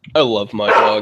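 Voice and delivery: heavy, dripping sarcastic delivery. Saying something about a dog: very sarcastic. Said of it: "As I say that very sarcastically".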